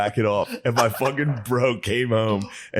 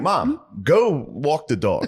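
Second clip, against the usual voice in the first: very slow, stilted, wooden, poorly acted delivery; 4 semitones higher than usual. Retelling how an eighth grader talked his mom into leaving: imitating a poorly acted line. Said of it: "just poorly act".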